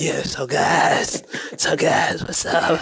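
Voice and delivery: put-on very slow, scratchy old-fiend drawl. Mocking a friend's voice from an earlier episode: imitating a scratchy old fiend voice. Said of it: "you sound like an old fiend in the projects".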